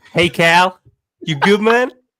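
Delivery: loud, terrible fake American accent. Greeting Cal on a call, a caller puts on a bad American accent. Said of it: "the two worst American accents".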